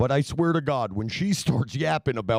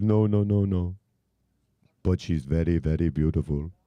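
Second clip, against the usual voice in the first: put-on Indian accent, much lower, slower; 6 semitones lower than usual. Retelling a man's answer when accused of sleeping with the speaker's wife, Indian accent. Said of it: "[name]'s best Indian accent".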